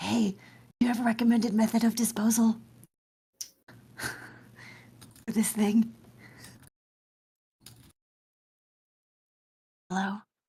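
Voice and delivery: quiet, slow, hushed whisper, words drawn out. Speaker testing whether the device's voice still works, asking about disposal, whispering. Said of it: "I'm just like whispering".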